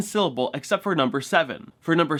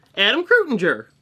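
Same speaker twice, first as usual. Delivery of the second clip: very fast, syllables squashed together; 5 semitones higher, 3 dB louder than usual. Showing how a character says a name when talking fast; said fast. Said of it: "then he's going to say it fast".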